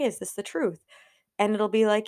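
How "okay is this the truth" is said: ordinary talk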